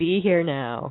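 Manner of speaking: put-on really mean voice. Describing how their grown-up self talks to them, in a mock-mean voice. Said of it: "in a really mean voice".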